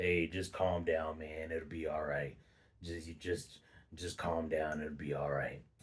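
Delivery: very deep, very low, very soft hushed voice. Retelling how the speaker's brother tried to calm them down, imitating brother's deep voice. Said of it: "he has this deep voice".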